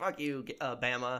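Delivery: ordinary delivery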